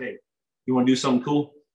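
put-on whisper. Retelling how the coach whispered a suggestion: imitating Coach Johnson whispering. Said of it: "he kinda whispers in my ear".

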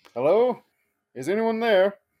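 loud, high call in a character voice. Calling out in character to a seemingly empty town: calling out loudly in character. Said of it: "Give me a taste of that in character".

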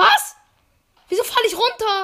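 high, loud, frightened, alarmed cry.

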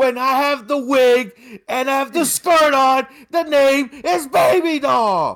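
mock indignant shout.

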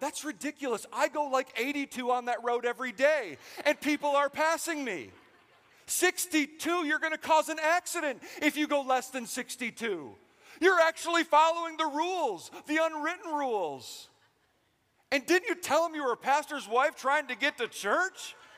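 high, loud, indignant ranting. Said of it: "I'm saying".

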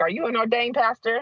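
high-pitched, snooty, condescending, talking-down tone. Retelling a woman questioning her after a baptism: imitating a condescending question. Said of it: "she's really just trying to put me in my place".

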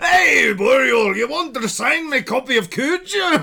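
booming, very loud, very high put-on Scottish accent. Imitating Scottish tourists who mistake someone for Stephen King: Scottish accent. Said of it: "Scottish tourists mistake Ethan for Stephen King".

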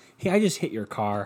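ordinary delivery

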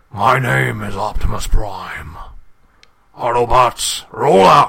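very loud, deep booming voice. Two speakers trading impressions; one teases the other's voice: deep Optimus Prime voice. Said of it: "You don't have a deep enough voice to go".

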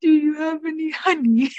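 put-on high, small Victorian boy voice. Joining in a bit with the others, the speaker pipes up: little victorian boy voice. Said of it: "He's asking like a little. Victorian boy".

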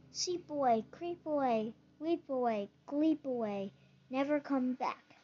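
ordinary delivery

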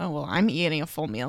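mock snide, passive-aggressive, sassy little dig. Retelling a girl's remark about ordering a full meal: imitating a passive-aggressive remark. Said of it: "kinda just passive aggressively being like".

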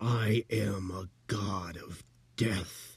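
very slow, drawn-out hissing voice. Narrator reading a story, voicing the tablet speaking to Jack, hissing voice. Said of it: "The tablet hissed".

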